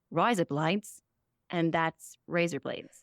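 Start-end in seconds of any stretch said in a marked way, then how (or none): 0.2-1.0 put-on Australian accent. Showing the only line done in an accent: australian accent. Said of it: "the only Australian I, I can do is I say".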